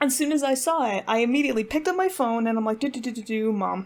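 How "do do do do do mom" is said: ordinary delivery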